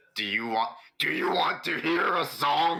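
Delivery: very high, very loud, rising, menacing shriek. A player's character sneaks up on two people to intimidate them, screaming really loudly. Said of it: "scream at them uh, as an intimidation and say really loudly".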